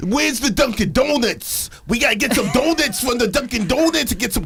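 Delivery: put-on New York accent. Doing a list of accents, number two: new york accent. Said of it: "New York accent".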